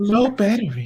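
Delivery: recorded announcement voice. Repeating the earpiece warning after hearing it: imitating the low battery lady voice. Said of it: "You legitimately sounded like the lady".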